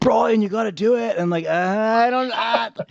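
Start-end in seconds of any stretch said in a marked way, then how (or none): 0.0-1.1 terrible put-on Australian accent. Retelling what Carl told him, in a horrific Australian accent as Carl. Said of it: "that was a horrific Australian accent".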